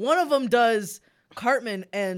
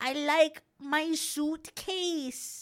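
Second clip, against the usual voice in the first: put-on childlike German accent, pitched up; 9 semitones higher, 4 dB quieter than usual. Recalling a clip of someone at seven, the speaker imitates him: little kid German accent. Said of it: "Is he German?".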